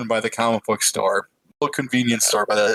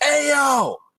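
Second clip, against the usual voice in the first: mock, piercing, shrill, very high scream. Retelling a customer yelling at them outside the courthouse: imitating someone screaming. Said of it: "this dude just screams".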